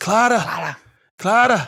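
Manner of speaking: very drawn-out put-on voice. Saying nobody can really do him, then doing a Twelfth Doctor impression. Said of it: "I can only do a fairly decent twelve when he goes".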